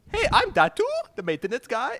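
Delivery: put-on very high, loud, swooping, sing-song Indian accent. Trying out voices in turn, introducing himself as the maintenance guy, Datu voice, Indian accent. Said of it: "I just sounded like an East Indian then".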